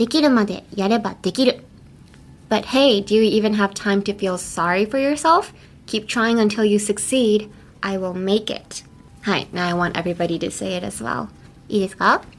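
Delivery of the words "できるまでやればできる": fast, rattled-off anime-style line read. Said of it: "I'm gonna say the phrase again".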